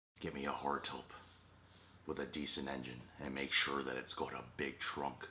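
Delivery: put-on weird, odd Irish accent. Quoting a film line, doing a weird Irish Dwight voice. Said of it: "That's a weird Irish Dwight I did".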